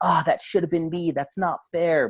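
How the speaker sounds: play-acted, high, resentful, blaming yell. Speaker acts out themselves at their iPad watching friends' videos, acting out a shout. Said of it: "I'm like shouting like".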